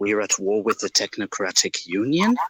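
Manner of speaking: underplayed, low-key, understated tone. A character finally realizing the truth, in a quiet voice. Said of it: "in a quiet voice".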